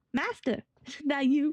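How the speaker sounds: put-on light touch of a Texas accent. Narrating a scene, the speaker voices a young Retnik in a vaguely Texan accent. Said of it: "Make him sound vaguely Texan".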